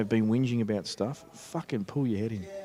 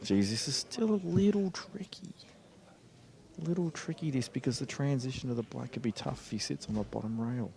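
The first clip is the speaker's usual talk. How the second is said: hushed voice, quieter; 6 dB quieter than usual. Commentating on a tricky shot while the room goes quiet: speaking quietly. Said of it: "I'm being really quiet".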